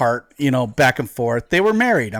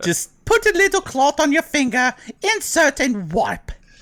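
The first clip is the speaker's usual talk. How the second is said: very high, put-on elderly English woman's accent; 13 semitones higher than usual. Spoofing a spokesperson ad for One Wipe Charlie's wipes, in an old English woman accent. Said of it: "Why am I doing an old woman's English accent?".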